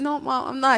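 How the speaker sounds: put-on tearful crying. Retelling denying to Mom that it was hers: imitating own past crying. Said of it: "I was, like, crying".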